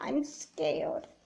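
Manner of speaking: tearful voice. Answering a friend who asks why she is crying: crying. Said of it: "why are you crying?".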